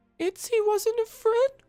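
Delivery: frightened. Voicing a girl who looks up with wide eyes: panicked. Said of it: "wide, panicked eyes".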